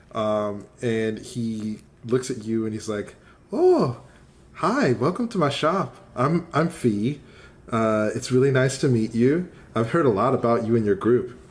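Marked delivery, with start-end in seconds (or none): 3.5-11.2 put-on boyish, young boy voice. Narrator voices the boy on the shop counter greeting the group, Fee, young boy voice. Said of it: "There's a young boy sitting on the counter".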